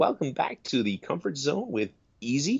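very high-pitched, squeaky voice pushed way up. Showing an impression you like to do, Easy welcoming listeners back to the Comfort Zone, high-pitched Easy impression. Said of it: "he's got a very high-pitched voice".

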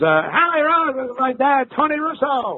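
unusual, very high, zany radio voice. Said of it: "He goes".

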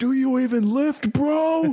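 play-acted very high, very slow, drawn-out yelling scream. Retelling how a friend screams at a wrestler from ringside: imitating Enrique screaming. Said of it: "he goes ringside and he screams at him".

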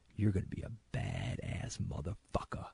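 put-on quiet voice. Recounting a RoboCop scene, the speaker quotes Robert Morton leaning in: quiet Robert Morton impression. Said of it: "real quiet, goes".

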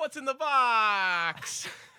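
very loud, high, slow yell, stretched out. At your mother-in-law's memorial, her remains in a box on a table, speak in your best Brad Pitt voice. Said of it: "in my best Brad Pitt voice".

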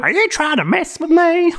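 put-on Southern accent, pitched high. Retelling an episode, the speaker voices her storming into engineering: Southern accent. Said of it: "you went southern".

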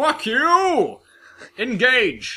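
stern captain voice with swooping pitch. Asked whether that is his Picard impression, speaker does a Picard impression. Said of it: "Is that your Picard impression?".

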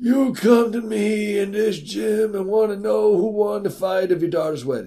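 very high, slow put-on drawl. Asked about Marlon Brando, answering in a Marlon Brando impression. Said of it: "What would Marlon Brando say about that impression?".

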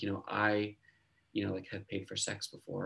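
hushed voice. Retelling what a guy at a book signing said: imitating a hushed tone. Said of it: "in a hushed tone".

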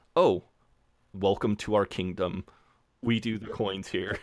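mock-friendly, put-on nicest tone. Retelling a scene, the speaker quotes someone, imitating a very nice tone. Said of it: "And Jeremy in the nicest way is like".

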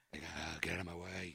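very low, hushed, rough raspy bass. Retelling how playing Batman made the voice go bassier: bassier Batman voice. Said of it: "my voice, I think, has gotten naturally more bassier".

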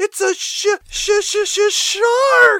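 high, very slow stammering shout, "shark" stretched out. Retelling a film scene, a character spotting a fin: imitating a stuttering shout. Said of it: "she shouts out".

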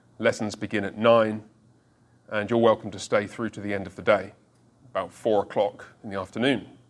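acted straight-faced tone. Acting out a planned reply to a school inspector: deadpan. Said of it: "completely straight face, completely deadpan".

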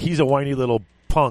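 normal talking voice

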